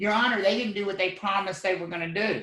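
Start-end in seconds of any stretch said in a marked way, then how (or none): none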